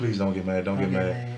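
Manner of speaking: put-on distressed, frantic voice. Retelling how their mom begged on the phone, imitating her frantic pleading. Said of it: "my mom called me like somebody just died".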